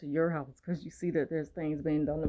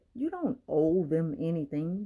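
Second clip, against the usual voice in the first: ordinary talk, nothing marked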